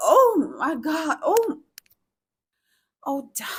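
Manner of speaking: seductive bedroom tone. Showing listeners which phrases to moan: sexy, seductive tone. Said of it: "please use a sexy, seductive tone".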